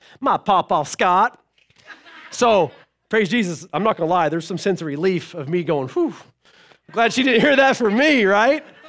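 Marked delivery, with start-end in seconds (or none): 0.2-1.4 put-on cheeky, sassy child voice. A parent retells a child's answer about who she heard it from: mimicking a sassy reply. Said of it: "with sass in her voice".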